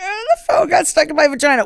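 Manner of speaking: high-pitched, tearful, sobbing voice. Retelling a woman in an article, with mock crying.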